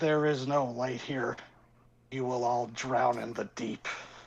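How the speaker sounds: gurgling, bubbling, burbling monster creature voice. Voicing a creature speaking from the deep water: burbling monster voice. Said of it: "you just hear this burbling voice".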